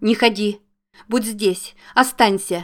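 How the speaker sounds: scared, urgent, frightened shout of alarm. Zoya calls out to Jake, frightened shout. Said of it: "испуганно крикнула она".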